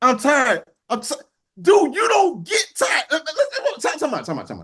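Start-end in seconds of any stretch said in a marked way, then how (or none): 1.6-3.0 high-pitched, swooping, fired-up, insistent worked-up outburst. Telling off a quarterback who complained about being tired, in a raised voice. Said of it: "I'm raising my voice".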